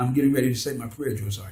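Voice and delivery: soft, calm, brought-down, chill tone. Retelling answering a drill sergeant, speaking in a real soft, chill voice. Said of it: "So I spoke in real soft voice, real chill".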